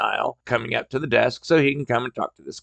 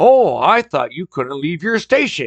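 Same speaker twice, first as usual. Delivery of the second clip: mock annoyed, sharp, irritated, snappish tone; 4 semitones higher than usual. Retelling what an upset customer said: imitating customer snapping. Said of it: "he snaps at me".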